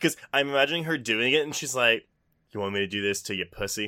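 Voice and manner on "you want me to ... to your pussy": put-on creepy seductive voice, much lower. Acting out how a woman seduces with a melon, mock-creepy seductive voice. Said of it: "Why does she sound like a sex offender".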